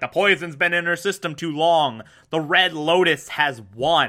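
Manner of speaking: plain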